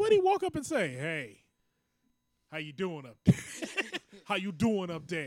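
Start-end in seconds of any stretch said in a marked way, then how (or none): 0.9-5.3 put-on New York accent throughout. Imagining what someone's dad said when he walked up to her: new york accent. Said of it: "That New York accent".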